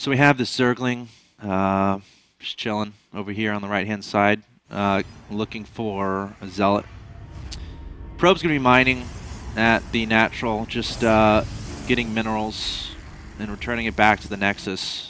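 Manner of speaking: emotionless drone, very low and very soft. Casting a game match as a bit, in an emotionless monotone. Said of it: "Cast without any emotions in a monotone".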